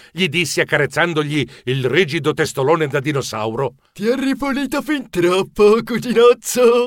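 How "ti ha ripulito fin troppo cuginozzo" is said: higher, teasing, said through a chuckle. The dragon remarks to the narrator about the pet triceratops, chuckling. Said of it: "ridacchiò il drago".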